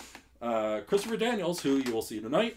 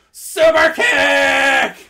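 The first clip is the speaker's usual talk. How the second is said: very high, very slow, loud, stretched-out yell. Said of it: "he would yell".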